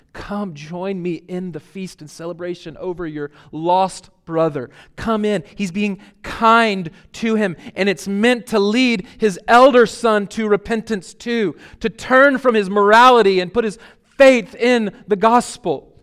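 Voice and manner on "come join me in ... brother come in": ordinary talk, nothing marked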